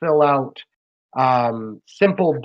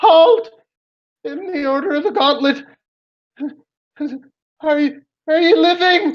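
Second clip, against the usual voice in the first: very high-pitched, weary, frightened calling out. Narrating a scene, voicing someone calling down from above to the heroes: tired, scared voice. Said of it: "a very tired and scared voice call out".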